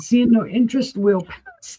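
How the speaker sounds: high voice cracking and breaking partway through. Passing after seeing no interest, voice cracking. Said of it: "Sorry, there went my voice".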